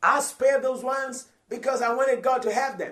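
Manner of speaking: loud, high-pitched mocking voice.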